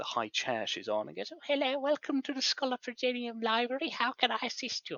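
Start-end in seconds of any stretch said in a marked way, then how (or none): 1.3-5.0 put-on high elderly lady's voice. The storyteller voices a library attendant greeting a visitor: elderly woman's voice. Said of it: "an elderly attendant who is there".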